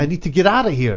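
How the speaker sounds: ordinary delivery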